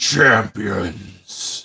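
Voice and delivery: loud, deep growling call from afar. Game master voicing a creature calling from behind the players, deep growling voice. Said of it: "a deep growling voice".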